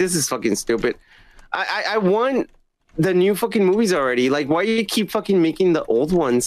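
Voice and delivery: pissed-off, fed-up rant. Complaining about the studio still making old movies: really pissed off. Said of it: "I'm really pissed, man".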